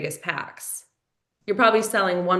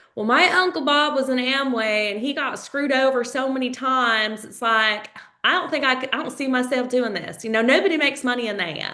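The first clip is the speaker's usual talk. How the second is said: fake higher-pitched Texas accent; 6 semitones higher than usual. Acting out a hesitant prospect's objection: put-on Texas accent. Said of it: "That's my Texas accent".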